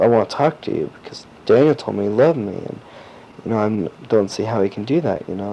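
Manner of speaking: ordinary talk, nothing marked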